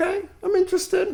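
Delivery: very high, perked-up interested tone.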